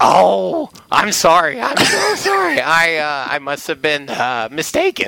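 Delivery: very drawn-out, slow sing-song voice, swooping up and down. Retelling what the journalist said when they first met: Tim Kurkjian impression. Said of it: "I started doing the Kurkjian thing".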